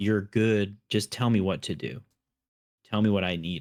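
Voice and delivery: ordinary delivery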